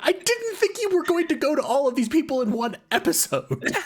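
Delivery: very high, fed-up, at-wit's-end exasperated tone. Recalling a companion at the end of his rope during an episode, imitating Andy's exasperation. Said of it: "like at the end of his rope".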